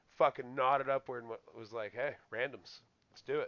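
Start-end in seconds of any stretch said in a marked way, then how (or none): 2.0-3.5 smug, swaggering, arrogant, cocky. Retelling an opponent's challenge to pick random characters: imitating an arrogant voice. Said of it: "you could hear it in his voice, the arrogance".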